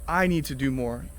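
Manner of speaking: the word I stressed, pushed up front. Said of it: "You need to do more".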